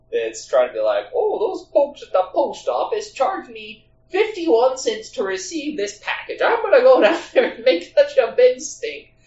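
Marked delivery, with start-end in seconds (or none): 1.1-9.0 high, heavy Midwestern accent, small-town busybody cartoon type. Mimicking the typical person in these situations, in a Maud Flanders type voice. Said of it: "Midwestern, like, Maud Flanders from The Simpsons type".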